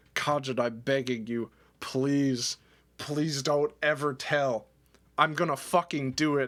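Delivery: tearful, sobbing, begging tone. Retelling a phone call, imitating someone sobbing. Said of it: "sobbing into it".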